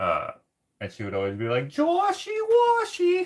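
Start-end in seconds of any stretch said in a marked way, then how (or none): 1.7-3.3 very high, squeaky, loud, teasing schoolgirl voice. Recalling a girl who always called the speaker by a nickname; imitating a high-pitched voice. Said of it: "she had like a very high pitched voice".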